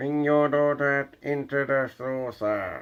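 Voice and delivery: high, slow, silly put-on alien voice. Joking that an alien is talking: stupid alien impression. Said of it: "That was a stupid, idiotic impression".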